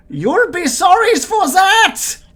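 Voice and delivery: very high, loud, put-on German accent. Voicing an unseen creature in the dark: german accent. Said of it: "It's German. Or possibly Austrian".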